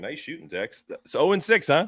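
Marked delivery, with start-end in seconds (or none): 0.0-0.8 very quiet, hushed, biting, heavily sarcastic. Quoting a famous movie line after losing every pick: sarcastic Bill Murray quote. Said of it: "a very sarcastic tone there".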